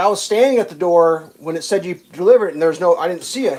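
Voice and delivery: ordinary talk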